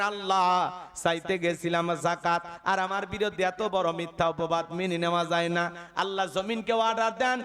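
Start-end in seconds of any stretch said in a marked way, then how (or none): none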